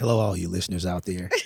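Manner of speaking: voice dropped, a little raspy. Greeting the listeners after being introduced: voice dropped, a little raspy. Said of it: "Did my voice drop a little bit".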